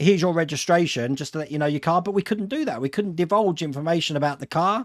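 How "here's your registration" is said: ordinary delivery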